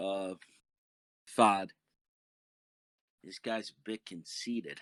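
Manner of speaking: hushed whisper. Narrating a game scene, the speaker voices a confused kid: whispering. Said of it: "sort of whispers to you".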